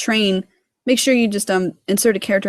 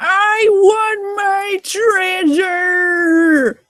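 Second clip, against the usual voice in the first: acted, shrill, very high, drawn-out screaming cry; 11 semitones higher, 4 dB louder than usual. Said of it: "jumping and screaming".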